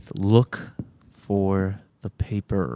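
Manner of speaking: forced words through clenched jaw and gritted teeth. Voicing a woman questioned in her office, speaking through gritted teeth. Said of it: "she says with gritted teeth".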